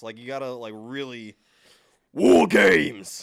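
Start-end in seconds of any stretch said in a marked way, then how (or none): 2.1-3.2 booming, very loud, rough shout from the chest. Showing another speaker how to announce the event name, shouted from the chest. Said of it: "It comes from the chest".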